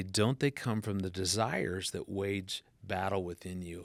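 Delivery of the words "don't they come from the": usual speaking voice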